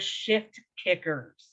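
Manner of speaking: slow, careful, each word drawn out. Naming a women's group slowly for the audience: slow, careful 'Shift Kickers'. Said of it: "I said that really slowly for y'all".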